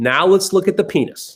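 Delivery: put-on voice of an elderly woman. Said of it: "She goes like this".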